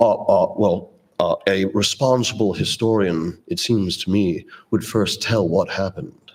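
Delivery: imitated, put-on English accent. Retelling an interview answer, imitating William F. Buckley's English accent. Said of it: "he had this weird, strange accent, this English accent".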